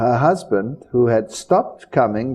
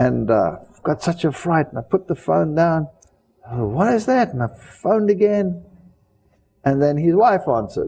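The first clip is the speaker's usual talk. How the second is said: plain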